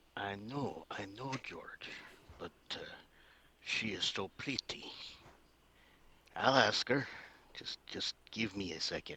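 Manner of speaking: quiet, hushed, half-audible voice. Speaking in character to a companion about a woman nearby: speaking quietly in character. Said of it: "trying to be very quiet".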